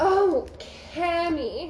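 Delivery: groaning voice.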